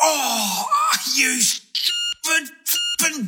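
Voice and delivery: sudden, very high-pitched cry of pain. In a radio ad, Kyle Smithers slips a disc opening a screen door, in sudden pain. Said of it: "what Kyle Smithers says when he slips a disc".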